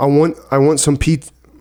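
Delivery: loud, high-pitched, thick New Jersey accent. Asked to show what a jersey accent sounds like, in a strong new jersey accent. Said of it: "has a strong Jersey accent".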